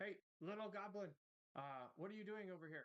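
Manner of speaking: calling out loudly. Player's character scrambling up a hill calls to a little goblin, yelling out. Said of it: "I'll yell out in Goblin as I'm scrambling up".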